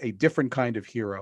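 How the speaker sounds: plain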